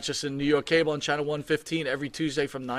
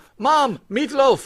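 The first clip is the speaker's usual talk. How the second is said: put-on British accent, high, shrill, loud, booming; 10 semitones higher, 9 dB louder than usual. Redoing the kid's earlier line, now in a British accent. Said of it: "Get me the meatloaf in British".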